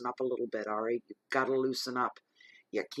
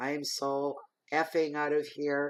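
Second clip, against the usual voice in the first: plain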